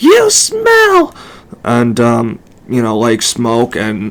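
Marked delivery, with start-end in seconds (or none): 0.0-1.1 very high, shrill, screamed voice. Speaker retells a woman screaming at them: imitating someone screaming. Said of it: "she starts screaming at me like".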